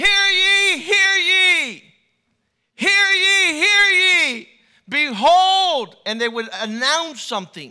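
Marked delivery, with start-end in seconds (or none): 0.0-6.0 very loud, booming, slow, drawn-out town-crier call. Imitating the announcers of old who proclaimed news: loud town crier proclamation. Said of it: "a proclamation is loud, it's boisterous".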